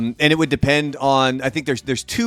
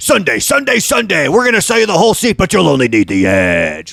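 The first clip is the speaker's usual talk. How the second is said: over-the-top monster truck announcer voice, higher, louder; 5 semitones higher, 7 dB louder than usual. Imitating the Monster Jam announcer: monster truck announcer voice. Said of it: "That voice is the best".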